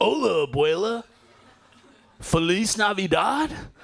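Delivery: put-on loud, beginner's high-school classroom Spanish accent. Speaker imitates their older sister's adult son speaking spanish: imitating nephew's school-class spanish. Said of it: "he speaks like this".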